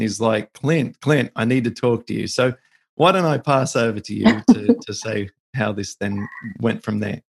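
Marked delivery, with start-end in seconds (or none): 0.5-2.3 put-on urgent tone. Recounting a man's phone call from a cruise ship, retelling an urgent tone. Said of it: "in a sort of an urgent kind of tone".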